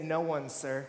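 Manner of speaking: acted broken-sounding, faltering delivery. Retelling the woman's answer to Jesus: imitating a broken voice. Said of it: "hear her broken voice say".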